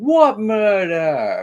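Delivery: put-on heavy New York accent, very high, loud. Retelling an interviewee's reply to a news reporter, in a thick New York accent. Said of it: "In this very like thick New York accent".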